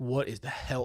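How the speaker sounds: put-on sobbing voice. Retelling breaking down on a phone call: imitating own past crying. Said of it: "and I'm crying, and I'm like".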